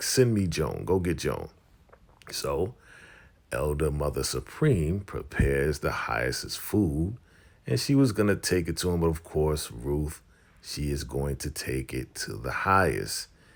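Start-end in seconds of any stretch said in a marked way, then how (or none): 0.0-1.5 put-on angry, forceful voice. Retelling a character at the door demanding food: imitating a mad, hungry character. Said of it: "And he is just mad right now".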